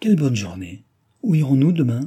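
loud, cried-out exclaiming. Narrator reads a character getting up from the grass, exclaiming. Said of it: "s'écria".

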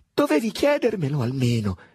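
high-pitched voice, trembling and shaking with rage. A man being sent away answers back, voice trembling with anger. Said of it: "rispose con voce tremante dall'ira".

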